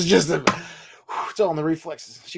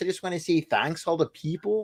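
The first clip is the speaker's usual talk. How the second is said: polite, courteous Canadian accent, pitched up; 5 semitones higher, 6 dB quieter than usual. Showing how to accept an honor politely, in a polite canadian tone. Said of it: "with a Canadian tone in your voice".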